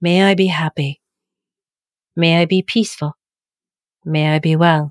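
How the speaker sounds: slow, deliberate, unhurried, heartfelt delivery. Guiding a meditation on sending love to yourself, slow and deliberate. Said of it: "Speak them slowly and deliberately".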